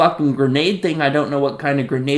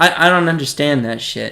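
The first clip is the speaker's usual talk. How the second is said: ordinary talk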